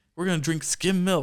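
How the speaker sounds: acted, high, frantic, wild, worked-up outburst. Retelling a movie scene where a character goes all crazy: imitating someone acting crazy. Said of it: "he's, like, all crazy".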